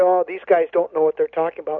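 plain

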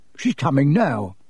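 usual speaking voice

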